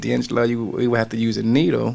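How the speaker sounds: ordinary talk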